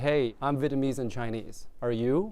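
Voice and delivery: ordinary talk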